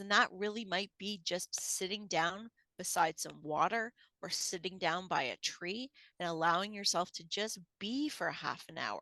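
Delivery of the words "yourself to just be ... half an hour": ordinary talk, nothing marked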